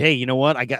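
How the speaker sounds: ordinary talk, nothing marked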